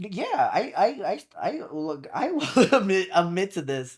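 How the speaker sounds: stammering with repeated false starts. Asked about leaving a restaurant they couldn't afford, the speaker admits it, stuttering. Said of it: "As much as I'm stuttering".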